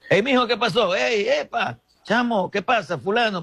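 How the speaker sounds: high, urgent calling out.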